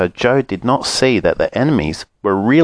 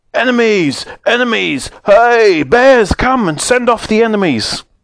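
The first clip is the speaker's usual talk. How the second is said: shrill, very high, blustery, windy snowstorm-like yelling; 14 semitones higher, 4 dB louder than usual. Narrating the magic snowman spotting the three bears, in a windy, snowy shout. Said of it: "began to shout loudly in a windy, snowy voice".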